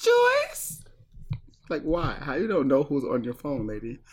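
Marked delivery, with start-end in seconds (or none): 0.0-0.8 very high-pitched calling voice, rising up. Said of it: "the mom was like".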